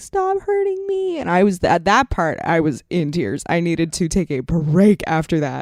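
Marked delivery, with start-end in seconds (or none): 0.0-1.2 tiny, very high-pitched, cute little creature voice. Describing a video game, the speaker imitates a creature begging them to stop, in a cute little voice. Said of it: "the cutest little thing ever with the cutest little voice".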